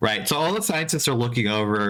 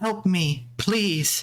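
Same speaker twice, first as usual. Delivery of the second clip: put-on lilting light childlike voice, higher; 7 semitones higher than usual. Voicing a voice the players hear in their heads: lilting childlike voice. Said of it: "a lilting, childlike voice say".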